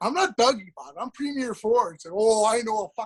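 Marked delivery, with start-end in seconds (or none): 0.0-1.9 self-important, pompous, insistent tone. Imitating Dougie insisting he is the premier, not Dougie. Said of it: "I think he's like".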